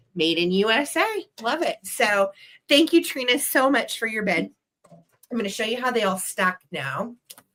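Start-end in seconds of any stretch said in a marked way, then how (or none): none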